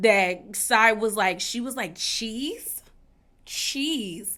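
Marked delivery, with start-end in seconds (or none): 2.0-2.8 put-on unimpressed, disapproving, questioning tone. Retelling how Sai reacted to the food plan: imitating a disapproving tone. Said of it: "like she's disapproving".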